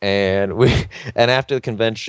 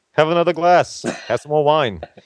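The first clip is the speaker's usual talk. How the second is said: pitched-up, pushy host voice, slightly higher; 6 semitones higher than usual. Retelling how Lou kept pushing more wine, in a Lou Ferrigno impression. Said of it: "my only impression I can do of Lou Ferrigno".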